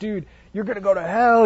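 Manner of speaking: fired-up, yelling pulpit preacher voice. Describing how most pastors preach, act out their style: imitating a yelling pastor. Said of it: "and they're like yelling".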